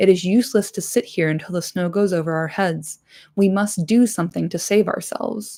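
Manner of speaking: usual speaking voice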